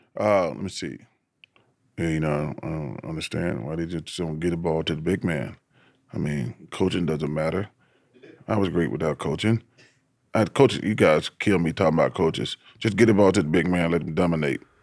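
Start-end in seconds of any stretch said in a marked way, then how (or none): 2.0-14.6 sports commentator voice. Giving a requested impression, complaining that coaches won't feed the big man: Shaq impression. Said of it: "my best, uh, impression of Shaq".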